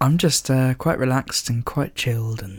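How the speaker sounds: smooth, sophisticated, slow late-night radio voice. Told by the co-host they sound smooth today, smooth late-night radio presenter voice. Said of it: "You sound a bit like I don't know, a late night radio presenter".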